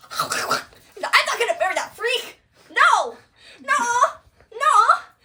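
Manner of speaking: very high, shrill, very loud furious outburst. Retelling the play, acting out Juliet refusing the marriage: imitating Juliet's angry outburst. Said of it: "Juliet crashes out".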